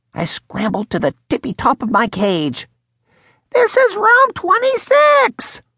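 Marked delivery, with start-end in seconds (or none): 3.6-5.6 tiny, squeaky voice, pitched way up. The classroom hamster scrambles up his cage to squeak at the students, small squeaky hamster voice. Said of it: "As the classroom hamster, I felt I had to squeak up. ... my voice is small and squeaky".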